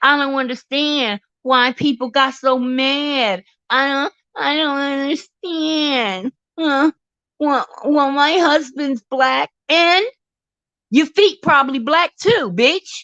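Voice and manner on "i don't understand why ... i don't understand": faux-naive voice, mad drawn out. Mocking a woman who plays naive about why people got mad: mock-naive voice. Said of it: "she likes to play like she's so naive".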